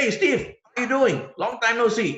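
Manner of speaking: excited, friendly tone. Coaching how to open a phone call with a contact: excited, friendly phone greeting. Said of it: "your voice must be excited. There must be excitement".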